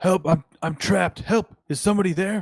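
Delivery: high, pleading cry. Voicing a trapped stranger below who calls out to the players: voice calling for help. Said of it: "a voice saying".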